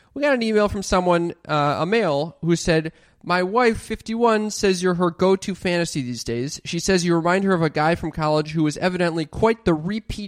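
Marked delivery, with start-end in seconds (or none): none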